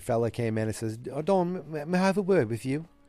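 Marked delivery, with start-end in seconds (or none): 1.1-2.8 rough attempted British accent, pitched up. Retelling what a London man said on coming in: attempted British accent. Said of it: "This is me trying to do a British accent".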